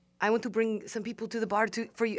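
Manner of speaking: terrible put-on French accent, rattled off. Bartending at an empty bar, retelling what Frenchie said, terrible French accent. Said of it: "that's a terrible French accent".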